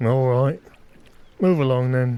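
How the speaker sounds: grumbling bouncer voice, muttered. A game narrator voices a man letting bar patrons pass, grumbling bouncer voice. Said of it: "he kind of grumbles to himself".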